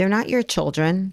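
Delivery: put-on sweet, innocent child voice. A mother retells what her eight-year-old said, imitating Aliza's innocent tone. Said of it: "and innocently".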